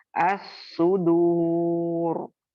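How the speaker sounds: heavy, thick, fully pronounced r sound. Showing how to read the words aloud: heavy thick r sound. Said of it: "موٹا کر کے پڑھیں گے۔ کیسے پڑھیں گے؟".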